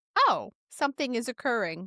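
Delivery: acted, completely deadpan, matter-of-fact understatement. Imitating how a calm witness reacted to a ghost: imitating a deadpan reaction. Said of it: "Just very, like, deadpan".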